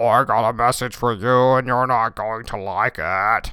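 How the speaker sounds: warbled, terrifying voice. Retelling a film scene where a student speaks from outside, Wyndham's warbled voice. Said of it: "he's speaking in this warbled voice".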